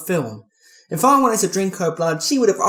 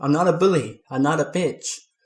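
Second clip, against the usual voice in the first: ordinary delivery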